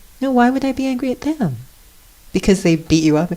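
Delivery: high, fast, sweet and innocent tone. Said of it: "looks at them so sweetly and says".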